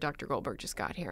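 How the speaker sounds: hushed, very soft whisper. Retelling a birth, quoting another's news: imitating someone whispering. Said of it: "you whispered in my ear".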